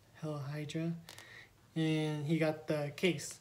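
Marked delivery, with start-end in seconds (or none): 0.1-0.9 put-on whisper, quieter. Retelling an elevator scene from a movie: imitating a whisper. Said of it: "he just whispered".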